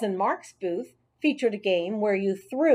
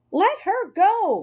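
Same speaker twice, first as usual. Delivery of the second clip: very high, tiny hamster-like shout; 10 semitones higher, 4 dB louder than usual. A small hamster yells at Marty, who is blocking Heidi's way: yelled. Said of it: "I yelled".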